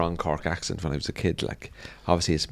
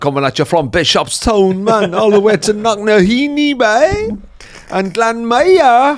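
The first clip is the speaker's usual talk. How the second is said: bad mock reggae voice, much higher, louder; 12 dB louder than usual. Imagining a reggae artist from cork, try a bad attempt at a reggae accent. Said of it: "that's not even reggae accent".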